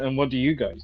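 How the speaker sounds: lofty, arrogant, haughty tone. Retelling what a performer from the earlier show asked: imitating an arrogant tone. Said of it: "he's kinda arrogantly going".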